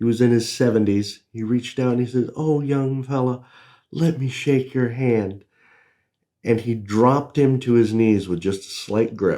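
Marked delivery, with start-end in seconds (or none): 2.3-5.4 mild delivery, a touch higher in pitch. Retelling a man in his seventies greeting a young fella: soft-spoken Danny Hodge voice. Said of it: "soft spoken voice".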